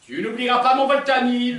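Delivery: very loud, high-pitched shouting. The speaker replays a reminder given to the listener in the kitchen, shouting. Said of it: "je me revois là au milieu de la cuisine en train de te dire".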